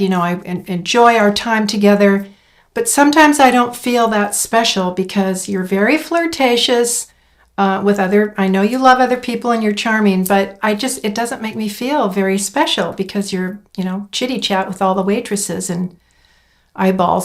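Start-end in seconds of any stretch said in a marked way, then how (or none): none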